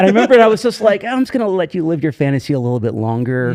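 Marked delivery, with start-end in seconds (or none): none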